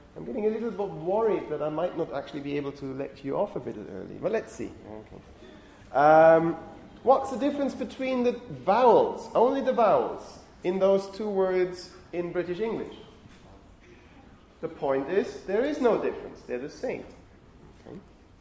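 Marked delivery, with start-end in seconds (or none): 0.2-3.8 speeding up a little, getting fast. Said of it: "I'm speeding up a little here".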